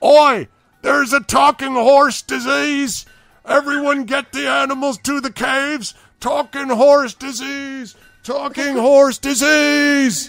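very loud, high-pitched, shrill, booming, alarmed calling out. A running figure calls out to everyone down the hills, shouting across the hills. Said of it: "you hear his voice reverberating down the hills".

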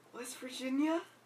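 doubtful, hesitant. Naming a pick while going through a list of games: unsure. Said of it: "You sounded so unsure about that".

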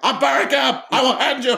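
very high-pitched, mad, angry voice. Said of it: "[name] would get mad".

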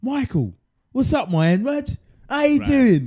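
put-on Cockney accent, high and loud. Acting out how the East London guy greets Michael, speaker does Falabi's Cockney accent. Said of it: "the Cockney East London guy".

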